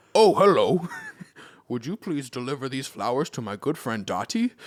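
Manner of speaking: big, hulking, deep and rushed mutant voice. Imagining a super mutant greeting them in the next Animal Crossing, hulking super mutant voice. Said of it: "this hulking super mutant just lumbering towards me".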